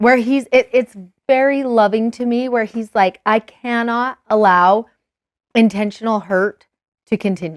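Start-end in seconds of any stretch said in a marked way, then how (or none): none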